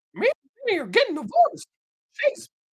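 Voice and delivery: squeaky voice at very high pitch. Right after doing Mickey Mouse, the speaker carries on in a Mickey Mouse impression. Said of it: "that was my Mickey Mouse".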